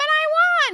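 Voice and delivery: shrill, very high, very loud triumphant scream. Retelling a drama scene where a character screams. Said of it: "She screams that she won".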